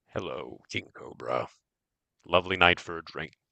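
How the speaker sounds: heavily distorted, low voice mangled through a drone speaker. A game master voices a drone addressing a character, heavily distorted voice. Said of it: "heavily distorted voice coming from the drone".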